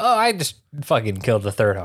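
put-on nonchalant villain voice. Retelling a scene, quoting Orochimaru: imitating Orochimaru nonchalantly. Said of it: "Nonchalantly, he's like".

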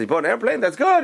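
quick, rattled-off put-on British accent. Telling a joke, voicing the guy's reply in a british accent. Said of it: "He puts on this British accent".

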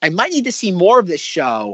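ordinary talk

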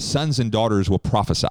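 ordinary delivery

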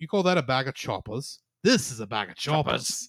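put-on Australian accent. Quoting a joke he made earlier, in an australian accent. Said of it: "I don't know if that's a good Australian accent, but that's close".

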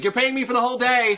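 very high, shrill put-on screech. Imagining sprinting out of an Easter village, screaming in a not-Easter-Bunny voice. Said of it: "just scream in my not-Easter Bunny voice".

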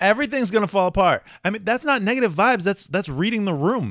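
shouting. Arguing with another speaker about negative vibes: yelling. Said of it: "You're yelling".

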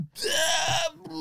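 mock squeal.

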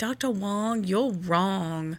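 slow, woozy, drugged-sounding, doped-up delivery. Retelling what she said to the doctor during the epidural: imitating herself doped up. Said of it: "I was really doped up".

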